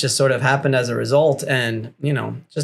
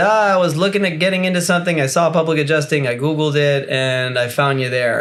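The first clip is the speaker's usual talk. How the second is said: ordinary delivery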